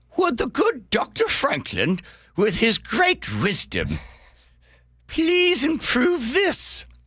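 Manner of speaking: very high, slow, drawn-out, swooping voice. Voicing Jefferson's request to Franklin without knowing how he sounded, in a high Thomas Jefferson voice. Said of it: "I'll give him a high voice".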